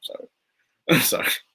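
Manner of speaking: swooping speech through laughter. Reading a lawsuit report aloud and apologizing for laughing, laughing while talking. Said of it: "I'm sorry, I'm laughing".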